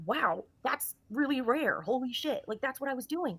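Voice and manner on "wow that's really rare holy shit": stunned, disbelieving, loud and drawn out. Retelling own earlier reply to a scratch injury: imitating own disbelief. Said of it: "Saying my disbelief".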